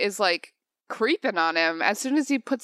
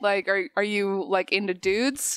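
ordinary delivery

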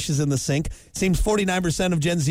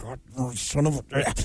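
acted mutter under breath, lower, quieter, slower; 4 semitones lower, 5 dB quieter than usual. Speaker recounting his reaction to a dish left out, retelling a mutter under breath. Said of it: "just under my breath".

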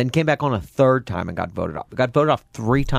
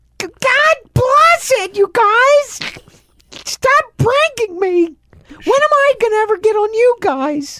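very high, loud, squealed, shrill put-on voice; 8 dB louder than usual. Speaker announces an impression of Melissa, then does it: Melissa impression. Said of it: "now let me do impression of Melissa".

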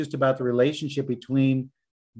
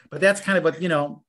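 ordinary delivery

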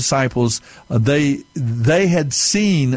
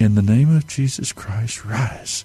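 words whispered under the breath; 3 semitones lower than usual. Retelling words said at a casket as a boy, imitating a whisper. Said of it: "under my breath".

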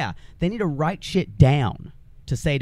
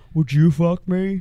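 mouth-full movie-villain voice, louder; 5 dB louder than usual. Describing how a man sounds with his mouth full, in a Buffalo Bill voice. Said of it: "sounds like to me is Buffalo Bill".

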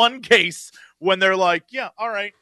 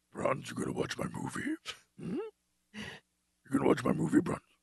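deep, whispered creature voice; 15 dB quieter than usual. Addressing Bruns about watching the movie, in a Yoda tipping over into Venom voice. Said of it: "You sound like Yoda tipping over into Venom".

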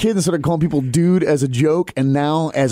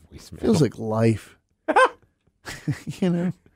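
defeated, beaten-down voice with swooping tone; 5 dB quieter than usual. Host opening a voicemail segment on the show, sounding defeated. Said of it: "You sound so defeated".

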